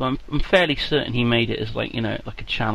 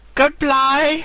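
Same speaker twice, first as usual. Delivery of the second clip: very high fake Chinese accent; 7 dB louder than usual. Saying goodbye to viewers in character, in a bad put-on chinese accent. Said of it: "Awful. Absolutely awful".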